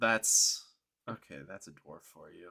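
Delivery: low, patronizing, talking-down condescending tone. A game master voices characters reacting to a player's character: condescending tone. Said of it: "They they look at you condescend- condescendingly".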